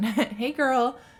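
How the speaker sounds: voice breaking, cracking on hello. Greeting a friend who may be watching, voice cracking. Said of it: "My voice crack".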